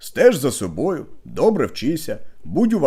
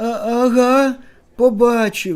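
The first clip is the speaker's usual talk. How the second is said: quavering, trembling high voice, Ага drawn out; 9 semitones higher, 4 dB louder than usual. Telling a joke, one character answers another's question in a trembling voice. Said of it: "Петрик тремтячим голосом".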